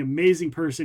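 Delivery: ordinary delivery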